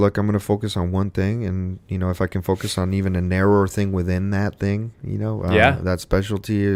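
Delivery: plain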